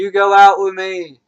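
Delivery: full-volume, high, far-carrying yell. Retelling asking a girl out as her car pulls away, reenacting their own yell. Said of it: "and I'm yelling".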